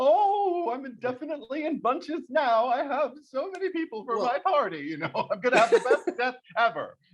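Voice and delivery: very high, swooping giddy voice, drawn-out oh. Pitching a story idea, the speaker voices the grieving dad's thoughts: mock-giddy Ed Wynn voice. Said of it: "I don't know why I sound like Ed Wynn".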